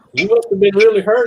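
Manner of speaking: thick put-on German accent. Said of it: "a German guy, real heavy accent".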